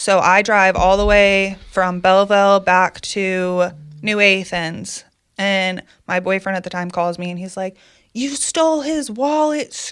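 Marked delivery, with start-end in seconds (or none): 8.1-9.7 mock screaming, much higher pitch. Retelling her boyfriend at the time calling about a friend's wallet, imitating him screaming. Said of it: "screaming at me".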